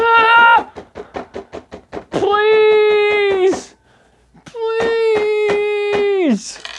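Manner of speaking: very high shriek on a long, drawn-out ah. Voicing a man pleading as he walks off in the distance, screaming. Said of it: "this guy's screaming".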